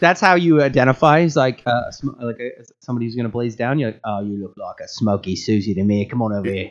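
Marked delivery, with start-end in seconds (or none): 4.0-6.7 put-on British bloke accent. Joking about a strain name, saying it like a British guy voice. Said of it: "said by a, a British guy".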